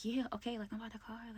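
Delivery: hushed, barely-there half-whisper under the breath. Retelling how she sounded talking on the phone, half-whispering. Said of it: "why are you whispering?".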